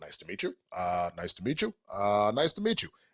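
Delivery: swooping, formal, sing-song delivery.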